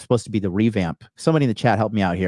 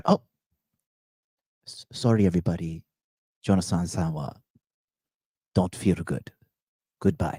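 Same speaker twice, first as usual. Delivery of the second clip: put-on Japanese girl voice; 3 semitones lower, 5 dB quieter than usual. Imagining a japanese girl apologizing to everyone: imitating a japanese girl. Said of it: "some hot Japanese girl comes from the back".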